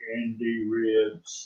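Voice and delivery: deep, slowed-down drone, very quiet. Retelling a video edit where the answer was slowed down, in a real deep voice. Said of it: "in a real deep voice".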